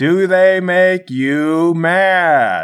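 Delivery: slow, loud, angry, deliberate, over-clear, stretched long. Repeating a question to someone who may not understand, slower and louder. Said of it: "maybe I'll just talk slower and louder".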